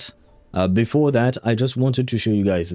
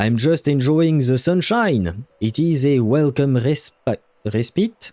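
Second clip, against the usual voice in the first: slow, put-on French accent, halting over "respite"; 2 semitones higher than usual. Talking to Sentinel in the wilderness, speaking with a put-on French accent. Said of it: "I should try and speak with a French accent".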